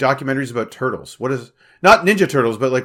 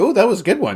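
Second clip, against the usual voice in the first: high, pitched-up, tiny little robot voice; 6 semitones higher than usual. Comparing a sidekick to a floating robot from Halo: 343 Guilty Spark voice. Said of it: "this little floating robot going".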